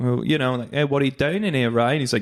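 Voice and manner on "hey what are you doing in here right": put-on Australian accent, Aussie bloke voice. Describing the guys in an Australian show: imitating an Australian accent. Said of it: "it's just a lot of guys saying".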